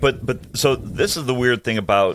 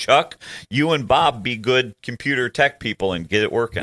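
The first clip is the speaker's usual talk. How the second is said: plain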